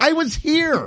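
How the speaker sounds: high furious outburst. Retelling being cut in line at a counter: retelling a furious remark. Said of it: "I just was furious".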